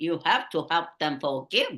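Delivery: put-on accent from Vienna. Retelling what a mentor said, imitating a Viennese accent. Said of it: "with his Viennese accent".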